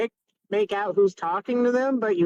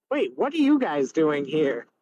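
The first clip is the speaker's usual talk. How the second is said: deep, very masculine grown man's voice; 5 semitones lower than usual. Narrating a voice the players hear at a portal, very masculine voice. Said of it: "it's a very masculine voice".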